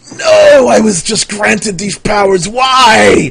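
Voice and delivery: high, loud, terrified scream. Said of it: "screams in terror".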